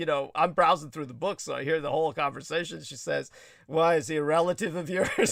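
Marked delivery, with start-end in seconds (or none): 3.7-5.3 annoyed, put-out, irritated, pointed tone. Retelling what an irritated woman asked: imitating an irritated woman. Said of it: "she got irritated enough".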